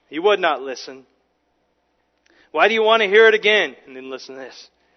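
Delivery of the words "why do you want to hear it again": raised voice, heavy dripping sarcasm. Retelling the beggar's fed-up answer to questioners: acting out a sarcastic reply. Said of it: "it just drips with sarcasm here".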